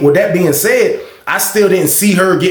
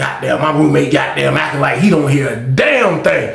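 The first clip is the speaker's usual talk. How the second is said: usual speaking voice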